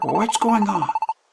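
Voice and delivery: quiet whispering. Hiding behind a rock after being told to hush: whispering. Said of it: "Fine, I'll whisper".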